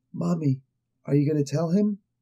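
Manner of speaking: whispered voice. Retelling a story, a voice comes to the mother asking her, whisper. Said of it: "she gets this whisper that comes to her".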